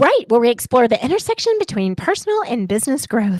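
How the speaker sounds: swooping, polished on-air radio announcer voice. Closing the conversation by plugging the show, in best radio voice. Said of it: "That was my best radio voice".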